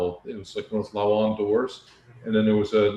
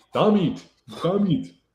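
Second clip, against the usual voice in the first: put-on little house elf voice, high-pitched; 9 semitones higher than usual. Teasing a friend who broke a piece off again: Dobby voice. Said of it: "You sound like Dumby".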